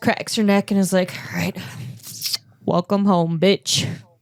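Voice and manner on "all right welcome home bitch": heavy sighing delivery, said through big sigh. Voicing Trig stepping through the door: said with a big sigh. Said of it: "Trig just sighs really big".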